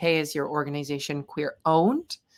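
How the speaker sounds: ordinary delivery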